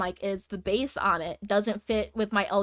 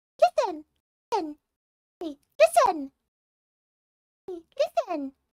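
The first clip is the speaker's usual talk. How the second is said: very high, tiny little fairy voice; 10 semitones higher than usual. Speaker showing the voices they could do as a voice actor, Navi voice. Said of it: "I can sometimes do Navi".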